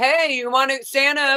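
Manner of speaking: high-pitched yelling out. Retelling what a guy hovering nearby was yelling: imitating someone yelling. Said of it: "And he was yelling".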